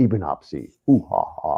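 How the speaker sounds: really deep, slow, drawn-out, booming voice. Imitating a voice heard on an audio recording: imitating a really deep voice. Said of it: "a really deep voice".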